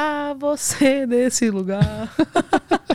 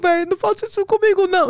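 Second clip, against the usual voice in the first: mock high, tearful sobbing in floods of tears; 6 semitones higher than usual. Retelling how a man begged not to be called a fool, imitating someone crying. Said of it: "Chorando, aos prantos".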